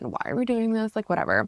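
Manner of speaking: acted annoyed, dismissive tone. Retelling being made to close their eyes and look inward, retelling own annoyance. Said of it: "I'm like annoyed".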